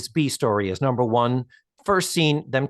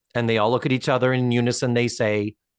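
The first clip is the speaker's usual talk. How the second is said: usual speaking voice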